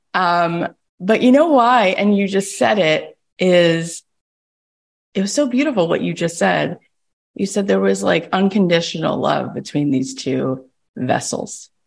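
speaking while crying, words forced through tears. Responding to what the other person just said, crying while talking. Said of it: "so I already started crying".

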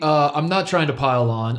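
ordinary talk

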